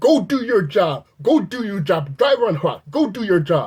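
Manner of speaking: mock angry yelling. Recounting a man who yelled at them while parked, retelling an angry yell. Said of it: "He says".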